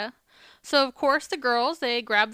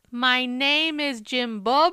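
put-on Spanish accent, spoken very slowly. Retelling how Jessa roasted a worker, Jessa's mock Spanish accent. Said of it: "talks slow enough or kinda has their ex accent".

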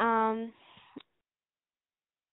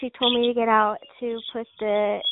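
ordinary talk, nothing marked

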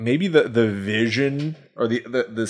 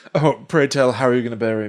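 usual speaking voice

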